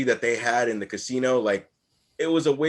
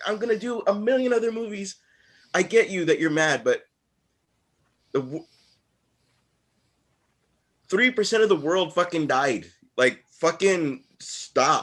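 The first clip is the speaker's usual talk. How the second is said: amped up, much higher pitch; 6 semitones higher than usual. Ranting to his co-hosts, very amped up. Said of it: "very amped up".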